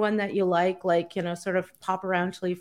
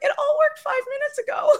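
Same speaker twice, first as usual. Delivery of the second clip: flustered, frantic, very high-pitched voice. Imitating a webinar presenter when everything stops working, mock-frantic high voice. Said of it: "kind of frantic with a high voice going".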